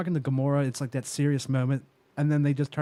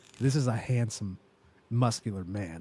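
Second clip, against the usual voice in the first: put-on dry deadpan voice, lower pitch; 4 semitones lower, 4 dB quieter than usual. Quoting the character's praise of Thor: dry Drax impression. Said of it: "When he's just like".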